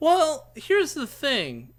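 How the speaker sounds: cracking voice. Starting to make a point in a discussion, voice cracking. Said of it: "my voice cracked in a very awful way there".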